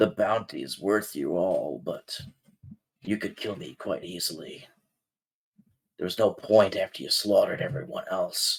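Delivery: very hushed, low, deep, growling hobgoblin voice. Voicing a hobgoblin speaking to the group, deep hobgoblin voice. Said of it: "a pretty like deep voice".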